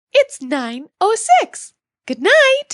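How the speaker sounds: slow, put-on cartoon mouse voice. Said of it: "in your best Minnie Mouse voice".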